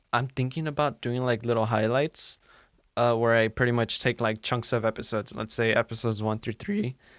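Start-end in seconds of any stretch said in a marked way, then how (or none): 5.3-6.9 voice cracking and breaking mid-sentence. Host describing plans for episode highlights, voice cracking. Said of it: "before my voice cracked".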